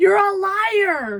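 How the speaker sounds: high, slow, drawn-out mock yell. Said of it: "Greg would yell at me".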